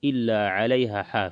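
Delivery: ordinary talk, nothing marked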